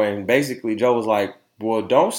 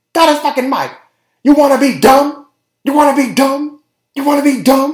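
put-on scream, higher and louder; 9 dB louder than usual. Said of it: "she was screaming the whole time".

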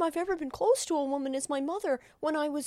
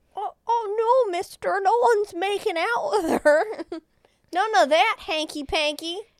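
put-on much higher, louder, wholesome 1950s kid voice; 3 semitones higher, 8 dB louder than usual. Acting out a guy reassuring Alice's protective father; 1950s kid voice. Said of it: "like he's like a kid from like the 1950s".

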